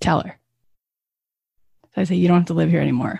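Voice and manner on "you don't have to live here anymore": whispering. Retelling words to little Kathy in therapy: retelling a whisper. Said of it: "Now you're gonna whisper to her".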